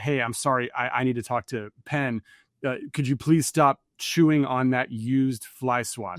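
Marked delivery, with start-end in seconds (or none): none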